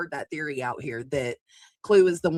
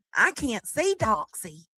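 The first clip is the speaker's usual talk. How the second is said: put-on down-home country accent, high and swooping; 7 semitones higher than usual. Reading a chat comment aloud when asked, in Indy's country accent. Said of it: "Indy's comment, but in Indy's accent".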